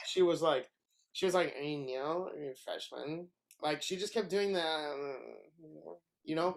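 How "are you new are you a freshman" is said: put-on soft, sleepy, tipsy, half-awake murmur. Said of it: "half awake, half drunk".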